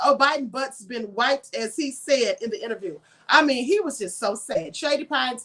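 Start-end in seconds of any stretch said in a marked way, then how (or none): none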